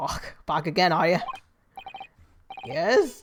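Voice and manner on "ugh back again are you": put-on Scottish accent. Voicing a game character greeting a returning visitor: scottish accent. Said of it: "I forgot about the Scottish accent bit".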